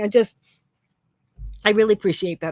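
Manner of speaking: crying, tearful voice. Thanking someone for mentioning their channel, crying. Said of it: "look at me, I'm crying".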